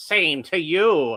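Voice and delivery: evil villain voice. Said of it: "I'm still going to give him the Skeletor voice".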